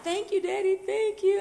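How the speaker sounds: mock boo-hooing through high, tearful sobs. Speaker retells thanking daddy for a purse gift, retelling crying thanks. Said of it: "And I'm crying and crying".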